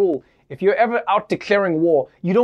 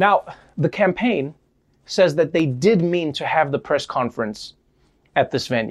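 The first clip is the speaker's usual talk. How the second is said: ordinary talk, nothing marked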